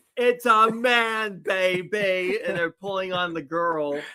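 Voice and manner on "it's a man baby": high-pitched character voice, drawn out very slowly. Quoting a movie line as Austin Powers: Austin Powers voice. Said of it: "Austin Powers".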